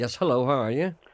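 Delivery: poorly faked, awful American drawl. Greeting a radio caller: awful American accent. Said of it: "That's an awful American accent".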